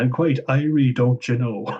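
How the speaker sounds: cringy, fake, put-on Irish accent. Mocking cringy Irish accents in films, doing Kristen Wiig's cringy Irish accent. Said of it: "So many cringy Irish accents out there".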